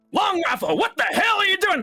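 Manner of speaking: very high-pitched, barked delivery. As players enter the training center, someone shouts at long rifle, barking out orders. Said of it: "someone like barking out orders".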